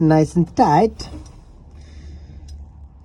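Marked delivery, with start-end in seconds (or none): 0.0-1.1 put-on slow, loud Eastern European accent. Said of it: "Don't know why I went Eastern European then".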